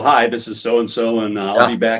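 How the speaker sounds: plain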